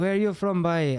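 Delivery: put-on Northern Irish accent. Retelling a production manager's question: imitating a Northern Irish accent. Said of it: "sorry about the accent".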